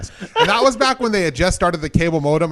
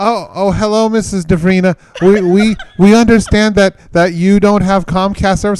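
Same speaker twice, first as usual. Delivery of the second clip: halting, stumbling, heavily broken English; 4 semitones higher than usual. Retelling a phone call from a comcast caller: imitating terrible broken english. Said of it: "some lady in terrible broken English".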